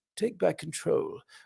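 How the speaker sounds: very soft, hushed, creaky royal murmur. Do the voice you tend to hear the slogan in, a Prince Charles-like voice. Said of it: "Was that Prince Charles".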